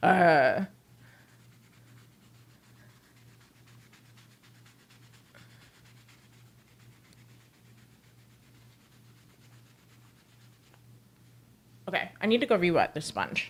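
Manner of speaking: heavy breathing, panting. Scrubbing scuffs off a shoe, stopping to re-wet the sponge, breathing heavy. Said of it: "I am breathing heavy".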